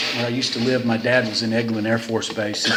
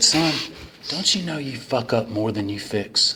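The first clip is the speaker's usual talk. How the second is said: put-on icy, cold, calm, controlled anger. Retelling a father's rebuke in the garage: imitating father's cold calm anger. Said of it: "he got really calm, just like this".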